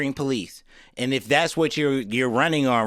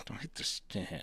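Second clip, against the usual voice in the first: quirky lilt on the final word stand; 4 semitones lower, 17 dB quieter than usual. Imitating how the other speaker just said a line: imitating an odd ending inflection. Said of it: "like the end of it had like the".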